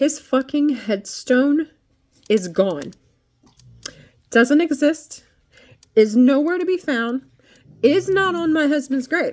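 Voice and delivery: upset and angry venting. Speaker recounting visiting their husband's grave with a friend, angry. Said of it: "I'm angry".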